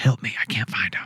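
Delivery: eerie, creepy, breathy whisper. Imagining a voice heard from the fog at dawn: imitating a creepy whisper.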